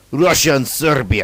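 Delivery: heavy put-on Russian accent. Listing World War One alliances, naming Russia and Serbia in a put-on Russian accent. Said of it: "That was a Russian accent".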